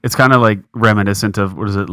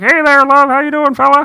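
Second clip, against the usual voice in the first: squeezed, compressed, very high-pitched voice; 4 dB louder than usual. Imitating how the speaker's dad talks: imitating dad's compressed-sounding voice. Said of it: "it sounds like he's being compressed".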